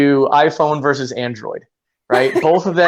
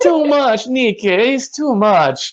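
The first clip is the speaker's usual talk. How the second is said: put-on Brazilian accent, pitched up; 8 semitones higher than usual. Imitating Brazilian friends complaining to Nick about homework, in a put-on Brazilian accent. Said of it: "I'm probably best at the Brazilian accent".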